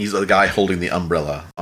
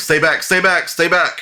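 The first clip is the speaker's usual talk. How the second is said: shrill, high, loud yell pitched way up; 10 semitones higher, 5 dB louder than usual. Voicing the guards as snow falls and everyone looks around confused: voicing the guards. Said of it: "you hear the guards, like".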